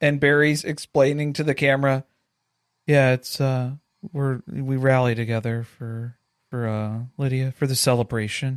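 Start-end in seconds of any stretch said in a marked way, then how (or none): 2.9-8.6 mock dreary, flat delivery. Retelling Barry's interview answer to the producers, imitating Barry's dreary monotone. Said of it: "the most dreary monotone explanation".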